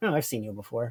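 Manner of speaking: unimpressed, over-it deadpan, very low. Retelling a character's reply to a revealed demon face: imitating a deadpan delivery. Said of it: "deadpan, like, over it the entire scene".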